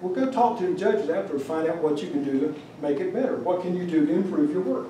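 plain

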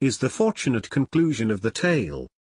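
ordinary delivery

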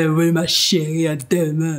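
put-on big deep voice. Imitating a man's reply to a woman: mocking his deep voice. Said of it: "Avec sa grosse voix là".

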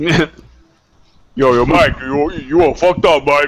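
very slow, lumbering, drawn-out, teasing drawl. Acting out Q's chat message again, an octave lower: imitating Q's deep voice. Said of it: "That's about as deep as your voice can get".

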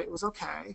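sullen, soft voice.

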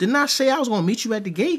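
very high, rushed feminine voice full of attitude. Retelling what a woman said about meeting at the gate, mock feminine voice with attitude. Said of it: "in the most feminine voice, with an attitude".

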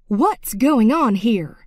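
insistent, loud, demanding. A teacher steps into the hallway after one student hit another; demanding. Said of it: "she demanded".

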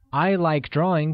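ordinary talk, nothing marked

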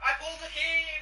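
high, loud, ecstatic excited yelling. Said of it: "I was yelling at my brother".

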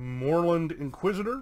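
ordinary talk

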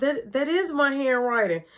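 ordinary delivery

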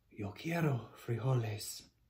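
grave, solemn, somber, low, very hushed. Standing tall before the others, he declares; most somber voice. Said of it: "in his most somber voice declared".

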